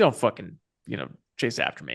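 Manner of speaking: hostile, angry voice, low and swooping. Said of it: "I'm just scowling at her like".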